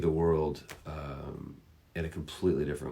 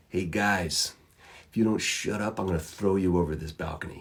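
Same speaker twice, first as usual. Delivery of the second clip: laid-back, relaxed yet threatening voice; 3 semitones higher than usual. Retelling how Ned warned hecklers on a balcony: imitating Ned's voice. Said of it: "imagine that voice".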